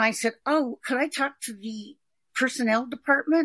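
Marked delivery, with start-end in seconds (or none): none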